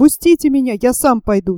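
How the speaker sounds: plain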